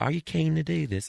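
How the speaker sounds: put-on Australian accent, very high pitch. Quoting Australian podcast hosts asking a question: imitating an Australian accent. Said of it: "I'm getting their accent now".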